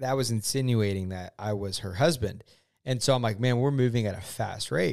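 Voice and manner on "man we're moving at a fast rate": usual speaking voice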